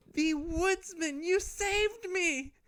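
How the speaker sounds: very high, breathless, slow gasping, grateful. Voicing a rescued girl clawing out of a wolf: gasping, grateful girl.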